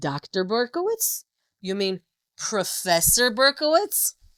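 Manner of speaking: indignant, affronted tone. Retelling how a nurse corrected the title, imitating an indignant nurse. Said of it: "she goes like this with her hands on her hips".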